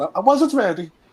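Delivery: put-on Italian accent. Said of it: "in his fake Italian accent".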